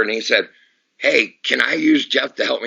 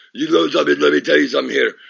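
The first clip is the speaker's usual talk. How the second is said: put-on Russian wrestler voice, pitched higher; 4 semitones higher than usual. Retelling a wrestler's in-character promo: Nikita Koloff impression. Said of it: "Nikita Koloff goes".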